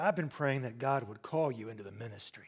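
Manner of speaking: mock let-down tone, very low and soft. Retelling what an unhappy man said to him: retold disappointed voice. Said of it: "in a disappointed voice".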